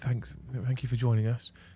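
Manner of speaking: deliberately hushed, very quiet, held-down voice. Showing how you spoke so the baby would not wake, purposely quiet voice. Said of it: "I would purposely make myself quieter".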